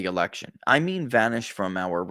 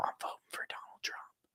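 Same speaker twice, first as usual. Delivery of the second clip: put-on hushed whisper, much quieter. Acting out a person speaking on the phone, retelling a whisper. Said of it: "I'm whispering to you on the phone".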